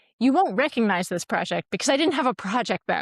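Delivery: light and teasing. Retelling a student's remark before her presentation: imitating someone saying it playfully. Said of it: "very playfully".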